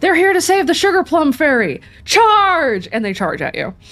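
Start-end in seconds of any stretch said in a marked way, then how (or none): 0.0-2.9 high-pitched, yelling battle cry. Game master voicing the head guard ordering the guards to charge, shouting a battle cry. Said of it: "the head guard shouts".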